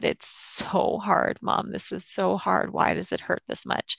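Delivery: sobbing words, acted out. Recalling a grieving phone call with her mom, retelling her own sobbing. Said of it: "I just totally fell apart and sobbed".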